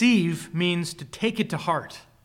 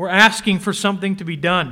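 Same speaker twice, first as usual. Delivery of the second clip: usual speaking voice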